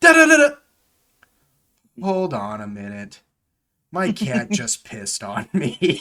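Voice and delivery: put-on crushed, disappointed, slow, utterly deflated tone. Retelling how a player interrupted a game: imitating utterly disappointed voice. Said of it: "just sounds utterly disappointed".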